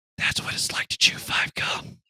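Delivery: loud, carrying, breathy stage whisper. Retelling a joke said in a stall: retelling a loud whisper. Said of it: "I just whispered in a, a loud whisper".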